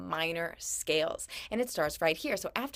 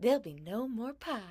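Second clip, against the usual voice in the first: sugary sweet voice, higher pitch; 4 semitones higher than usual. Narrator reading a story, a woman holding pie under an old man's nose, sweetest voice. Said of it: "she said in her sweetest voice".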